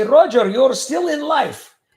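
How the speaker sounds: put-on Bulgarian accent, loud and high. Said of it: "The accent I do, I sound a lot like his".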